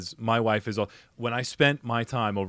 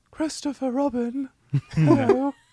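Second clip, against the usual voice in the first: creepy cartoon bear voice, very high, squeaky, loud; 5 dB louder than usual. Asked to try a voice, the speaker does a Winnie the Pooh voice. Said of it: "Try and do a poo voice".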